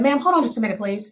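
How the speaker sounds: plain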